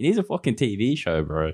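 ordinary talk, nothing marked

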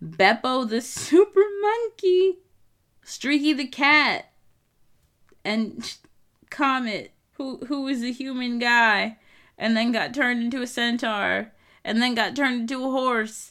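cracking up while speaking. Explaining comic characters the speaker finds unserious: laughing while talking. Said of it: "I can't stop laughing".

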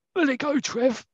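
very high calling voice. Retelling a football match moment, a player calls from behind: Malcolm McDonald impression. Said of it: "That's my impression of Malcolm McDonald".

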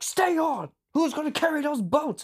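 acted, very high-pitched, loud berating hectoring shout. Retelling how he'd come back from a run and yell at you, imitate him yelling. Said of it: "he'd be yelling at you like".

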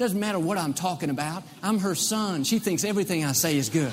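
ordinary talk

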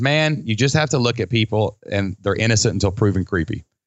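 ordinary delivery

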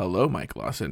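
voice sinking very low, deep. Retelling how they answer mike lawson's hello, voice dropping low. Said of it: "my voice drops when I do this".

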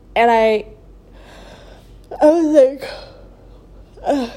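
loud groan, word dragged out through a yawn. Telling a story to her viewers: yawning. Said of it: "I'm yawning so much".

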